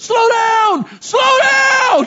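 very high, very slow yelling, stretched downward. Recounting yelling at the driver speeding through fog, retelling yelling at someone. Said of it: "And I'm yelling at him".

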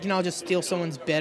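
plain

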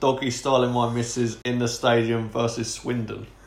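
normal talking voice

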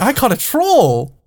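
put-on high, slow, proud, childlike delivery. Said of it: "He's like".

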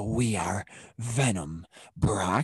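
deep, creepy voice, very slow and crawling. Comparing versions of a character's voice, quoting the first one: creepy Venom voice. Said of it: "the first Venom voice was creepy".

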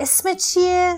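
insistent, pressing. Narrator reads a character pressing another for an answer: insistent question. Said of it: "استن با سماجت پرسید".

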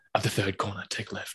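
calm, quiet, dead serious whisper. Imagining a GPS giving directions: Liam Neeson Taken voice. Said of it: "Liam Neeson's Taken voice".

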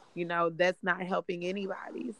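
ordinary talk

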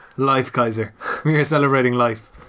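ordinary talk

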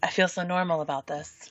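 put-on sexy, sultry, seductive voice. Speaker says how they feel about a player's point total, in a sexy voice. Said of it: "you have to say it in the sexy voice".

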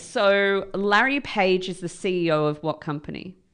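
plain

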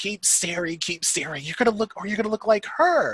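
mock yelling loudly. Telling a story, the speaker reenacts what they yelled to a tall guy: retelling a yell. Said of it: "I'm just yelling at the top of my lungs".

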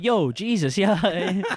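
put-on New York accent. Telling someone how Harvey Keitel plays Judas, imitate Harvey Keitel's weird New York accent. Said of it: "He's got this weird New York accent".

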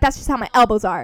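snide, dismissive, snarky tone. Retelling another speaker's reply to a form correction: imitating a snarky remark. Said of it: "You were so snarky".

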